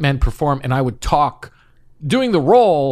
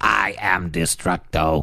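put-on guttural voice, much lower; 8 semitones lower, 4 dB quieter than usual. Showing the voice that was wanted for the job, a guttural Zorak voice. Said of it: "so it's very guttural".

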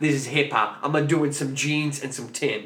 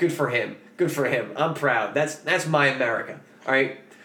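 normal talking voice

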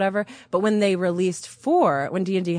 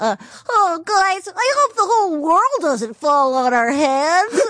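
put-on very high, slow little boy voice; 10 semitones higher, 5 dB louder than usual. Speaker demonstrates a character voice they did, Chicken Weebus's little boy voice. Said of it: "So he's the little boy voice".

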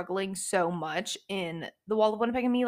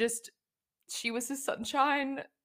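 soft, high, moved, teary voice; 5 semitones higher, 5 dB quieter than usual. Going through quotes about Jasper and Sloane, getting emotional. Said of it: "I'm getting emotional".

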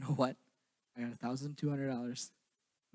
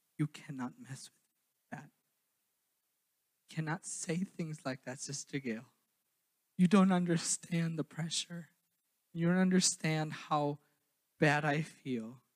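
put-on tearful pleading voice, higher; 3 semitones higher, 3 dB louder than usual. Retelling hearing that someone paid the whole bill: retelling being almost in tears. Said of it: "almost in tears".

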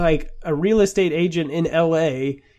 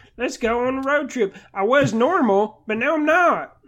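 slow, drawn-out, pitched-up dopey dumb dad voice; 8 semitones higher than usual. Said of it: "Why are you talking like that?".

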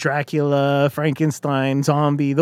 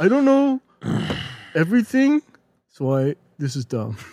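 swooping, mocking, put-on tone. Mimicking the other speaker's complaint about the list: imitating the other speaker complaining. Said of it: "It's dead on".

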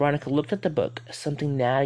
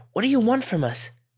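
shrill, very high, loud yell; 9 semitones higher, 5 dB louder than usual. Narrator reading Veronica's line to the voice in her head, yelled. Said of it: "she yelled".

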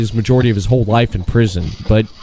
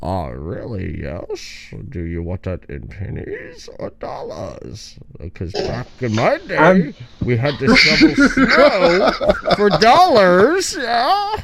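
slow, drawn-out, sing-song villain voice with swooping pitch; 6 semitones higher than usual. Acting out paying at a store while wearing a mask: Bane voice. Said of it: "walk around talking like Bane".

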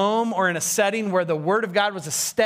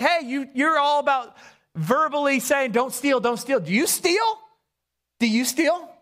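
pointed sarcastic tone, pitched up; 6 semitones higher than usual. Acting out Paul questioning his readers: sarcastic Paul imitation. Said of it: "Paul is bringing some sarcasm".

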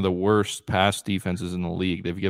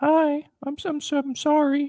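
put-on high-pitched boy voice, much slower. Describing a 9-year-old boy on Fox News, imitating his high-pitched voice. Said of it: "He's got like this high pitch".

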